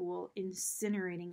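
ordinary delivery

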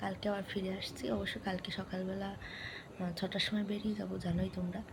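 very soft whisper. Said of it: "কথা বললে ও উঠে যাচ্ছে".

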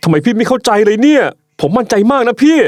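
exasperated, pressing, high insistent voice. In a drama scene, speaking to an older sibling, loud. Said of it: "อย่าเสียงดังสิ".

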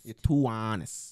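strongly laid-on, exaggerated New York accent. Trying the line again, Trump impression. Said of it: "too New York in there?".

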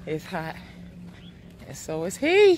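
panting, winded, spent, out of breath. Ending a video, the speaker says it's hot, out of breath. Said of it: "because I'm out of breath".

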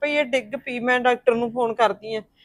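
ordinary delivery

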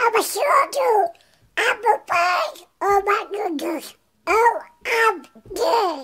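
high, loud, quacking delivery. Taking a turn at impressions for a listener to guess, Donald Duck voice. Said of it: "Is that Donald Duck?".

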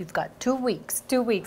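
put-on light, soft touch of a Boston accent. Quoting a fellow actor's line from a film scene, slight Boston accent. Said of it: "he has this little Boston accent".

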